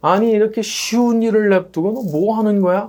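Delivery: high, loud, scoffing and reproachful. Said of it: "그렇게 말할 수도 있겠지만은".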